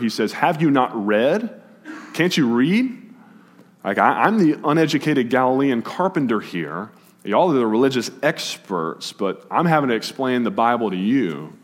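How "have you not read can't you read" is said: biting, heavy sarcasm with swooping high pitch. Quoting Jesus mocking the religious experts: quoting Jesus with heavier sarcasm. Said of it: "Jesus lays it on even thicker".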